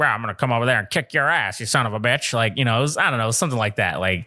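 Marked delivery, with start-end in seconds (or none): 0.0-2.3 put-on Southern man's voice. Retelling prank call characters: Roy D Mercer-esque Southern guy. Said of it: "it was like some Southern guy just like".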